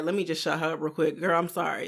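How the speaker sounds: imitated dismissive, insincere tone. Imitating someone brushing off a partner with a quick apology: imitating a dismissive apology. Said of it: "You just saying it to be like".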